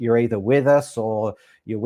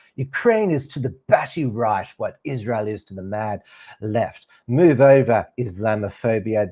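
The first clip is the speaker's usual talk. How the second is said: pompous, put-on voice. Reading his article in the Australian aloud, a mock-pompous Brendan O'Neill impression. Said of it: "I'll try to a, impersonate his pompous voice".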